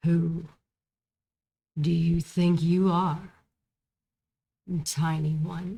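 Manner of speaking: growling, growly female dragon voice. Narrating a scene where an immense dragon confronts you, in a growling feminine voice. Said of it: "you hear this growling feminine voice".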